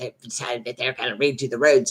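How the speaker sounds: mumbling under breath. Retelling muttering to herself after an argument: imitating mumbling under breath. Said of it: "And it's under my breath".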